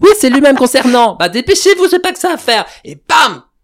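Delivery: very high, loud, high-energy comic voice.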